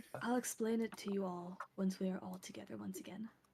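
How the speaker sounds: very hushed voice. Narrating a character who speaks so the dwarf won't hear, very hushed voice. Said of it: "they are talking in a very hushed voice".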